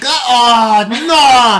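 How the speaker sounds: mock North Korean accent. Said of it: "Why do you get a North Korean accent".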